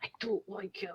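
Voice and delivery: whispering. Whispering to another character so someone nearby won't hear: whispering. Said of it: "I'm going to whisper to".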